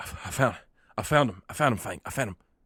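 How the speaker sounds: rushed, breathless, panting out of breath. Voicing Thorn returning from scouting in a rush, panting out of breath. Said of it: "he's kinda panting".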